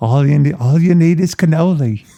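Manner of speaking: put-on British accent. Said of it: "It sounds like a British".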